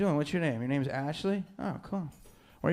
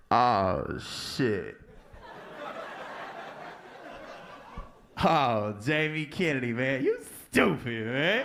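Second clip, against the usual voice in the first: teasing, ribbing voice; 3 semitones lower than usual.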